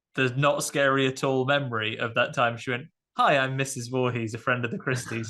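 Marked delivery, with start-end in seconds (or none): none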